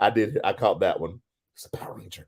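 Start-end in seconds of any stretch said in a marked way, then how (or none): 1.5-2.3 mock muttering under the breath, quieter. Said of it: "it's the under her breath thing".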